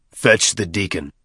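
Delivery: ordinary delivery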